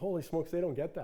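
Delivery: ordinary talk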